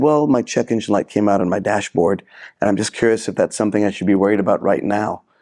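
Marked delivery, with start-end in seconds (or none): none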